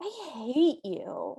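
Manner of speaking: slow, very petulant sulk. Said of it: "she very petulantly goes".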